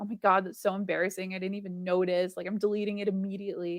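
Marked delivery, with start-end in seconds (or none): none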